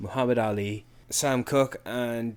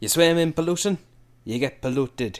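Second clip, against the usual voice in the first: loud, bad put-on Jamaican accent; 4 semitones higher, 5 dB louder than usual. Quoting a fight scene from a movie you loved, in a terrible jamaican accent. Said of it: "That is such a terrible Jamaican accent".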